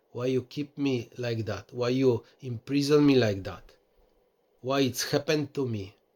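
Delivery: ordinary delivery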